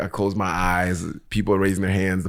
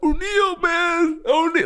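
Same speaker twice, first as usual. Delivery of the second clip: put-on loud tearful crying shout, higher pitch. Retelling an usher crying and calling out in church: imitating a loud crying call. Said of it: "loud as fuck in the church".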